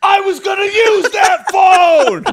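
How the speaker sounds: very high, loud, all-out shrieking scream. Retelling how dad reacted from the van: imitating dad screaming. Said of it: "my dad screams out the window".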